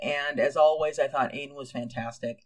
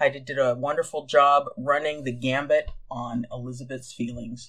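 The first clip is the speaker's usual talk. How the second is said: plain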